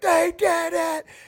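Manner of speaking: put-on screaming, very high pitched. Retelling a former teammate running up after the win: imitating a teammate screaming. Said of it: "and he's screaming".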